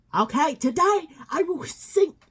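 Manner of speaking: very high, loud put-on South American accent. Recounting what a man said to them, imitating a South American accent. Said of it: "I think he comes from somewhere around South America".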